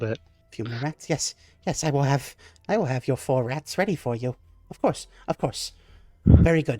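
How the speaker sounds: put-on kobold creature voice. Voicing a kobold server answering a player's order: kobold server voice. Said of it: "these green scaled kobolds".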